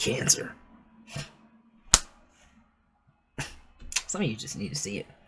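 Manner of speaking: throat catching, choked up, hushed and breathy near-whisper. Reading romance messages for Cancer to listeners, getting choked up. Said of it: "I'm getting choked up over here".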